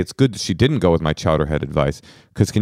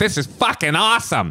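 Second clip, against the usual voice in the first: very high-pitched, put-on Boston guy voice; 12 semitones higher than usual. Acting out a Boston guy enjoying sex: imitating a Boston guy. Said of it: "That dude's just like".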